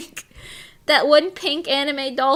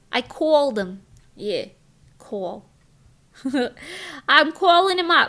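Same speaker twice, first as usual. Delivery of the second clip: put-on New Jersey accent. Speaker imitating how relatives on dad's side talk, in a New Jersey accent. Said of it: "they all say things like".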